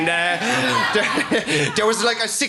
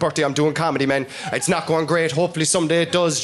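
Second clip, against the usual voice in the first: ordinary talk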